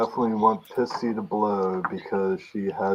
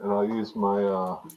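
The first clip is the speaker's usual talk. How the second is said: plain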